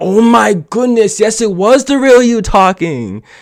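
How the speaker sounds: high, loud, exasperated yell. Recapping a show's scene, the speaker re-enacts yelling at the tv screen. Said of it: "I'm like yelling at the T V screen".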